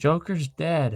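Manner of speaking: sudden, high, half-yelled blurt, held back. Retelling calling out to mom about the pet: retelling own yell. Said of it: "I just yelled".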